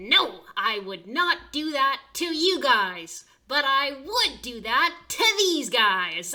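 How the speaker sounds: very loud, high-pitched ringmaster showman shout. Voicing Rice presenting specimens to a crowd: voicing Rice. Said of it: "He says".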